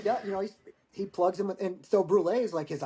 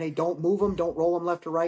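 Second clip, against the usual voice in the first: usual speaking voice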